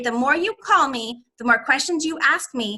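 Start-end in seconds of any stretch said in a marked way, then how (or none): none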